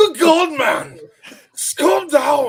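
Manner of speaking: put-on loudest, shrill yelling in an Irish accent. Retelling yelling back at a man demanding names, in the loudest Irish accent. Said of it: "in the loudest of Irish accents".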